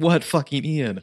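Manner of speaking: put-on wild, high-pitched screamed outburst. Imitating Rob running back into his office: imitating Rob screaming. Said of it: "and scream".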